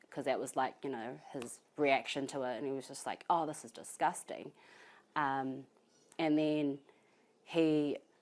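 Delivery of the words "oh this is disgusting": ordinary talk, nothing marked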